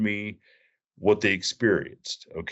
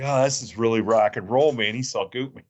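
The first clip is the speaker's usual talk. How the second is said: ordinary talk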